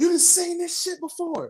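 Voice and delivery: mock very high wrestling-style scream. Retelling a wrestling match moment, imitating Roman Reigns screaming. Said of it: "he just screamed out of nowhere".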